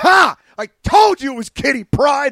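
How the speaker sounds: high-pitched, acted shouting. Retelling how Melissa gloated outside after the movie: imitating Melissa yelling. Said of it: "starts, like, yelling at me".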